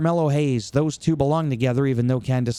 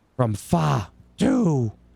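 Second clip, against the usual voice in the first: voice cracked deliberately. Threatening a whooping while paying homage on purpose, with a deliberate John Cena voice crack. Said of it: "My voice cracked".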